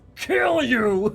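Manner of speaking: botched, squeaky troll voice, very high. Speaker voices a charging troll, in a terrible troll voice. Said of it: "That was a terrible troll".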